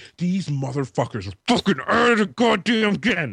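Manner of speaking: mock-angry, fed-up rant. Acting out a neighbour angry about loud sex next door: imitating an angry man. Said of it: "you could tell this dude is angry".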